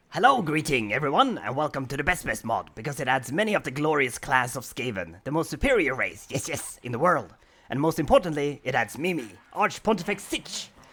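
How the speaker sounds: rat-man creature voice. Introducing a game mod to viewers; Skaven ratman voice. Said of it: "I will stop speak talk like Skaven now".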